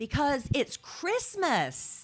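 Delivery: somewhat loud, emphatic voice. Retelling a talk with a daughter about concert tickets, imitating saying it loud. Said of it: "And I said it kind of loud".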